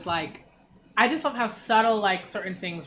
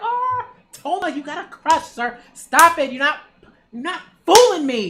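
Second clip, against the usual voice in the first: very loud, playful teasing voice; 8 semitones higher, 8 dB louder than usual. Teasing a manga character about a crush while reading: very loud. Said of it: "I'm very, very loud".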